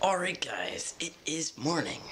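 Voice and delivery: whispered, barely voiced, soft whisper. Greeting the guys very early in the morning, whispering. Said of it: "you're probably wondering why I'm lit whispering".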